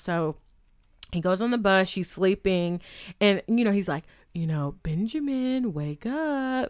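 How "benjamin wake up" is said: mocking, sarcastic, swooping sing-song tone. Retelling a guy waking a sleeping girl on the bus, mock-sarcastic wake-up call. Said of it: "like kind of being sarcastic".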